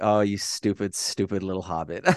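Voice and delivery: mock-condescending voice. Retelling how she laughs at him and answers, mock-condescending. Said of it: "so condescending".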